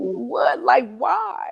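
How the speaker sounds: put-on raspy, stunned cry of disbelief. Recalling hearing that Bobby was beaten to death, retelling a disbelieving scream. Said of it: "And I just like start screaming".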